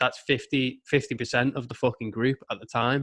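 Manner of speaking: plain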